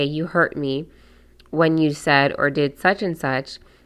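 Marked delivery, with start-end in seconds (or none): none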